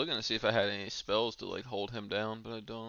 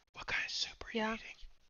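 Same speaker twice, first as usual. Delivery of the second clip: whispered close into the mic; 13 semitones higher, 4 dB quieter than usual. Asking another speaker what soup they are eating: whispering into the mic. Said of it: "I was trying to, like, whisper it into my mic".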